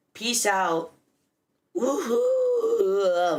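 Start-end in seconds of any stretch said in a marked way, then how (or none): 1.8-3.4 voice breaks mid-cheer on woohoo. A creator signs off at the end of an episode recording: voice cracking. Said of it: "Voice crack".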